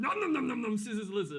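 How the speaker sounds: put-on monster voice. Saying the game's name as the agreed voice: Cookie Monster voice. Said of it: "We're going to go with a Cookie Monster voice".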